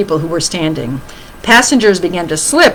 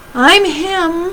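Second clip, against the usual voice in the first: very small, tiny, very high-pitched voice; 10 semitones higher than usual. Narrator reads Henry answering the question about the boy on the bus, in a very small voice. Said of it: "said Henry in a very small voice".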